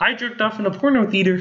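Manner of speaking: high-pitched cartoon frog puppet voice. Saying a line, then noting it came out in a Kermit the Frog voice. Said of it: "that was my Kermit voice".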